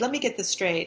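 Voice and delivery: ordinary talk, nothing marked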